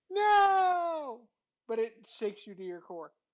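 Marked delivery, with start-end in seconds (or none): 0.2-1.3 very high, very loud squeaky belt, no drawn out. The game master voices a character's reply before rolling initiative; belting in high squeaky voice. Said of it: "he belts out in his high squeaky voice".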